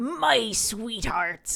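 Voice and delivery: loud, yarring, pirate-like sailor voice. Teasing a partner by repeating a line in a yarring sailor voice. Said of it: "Stop talking in that voice".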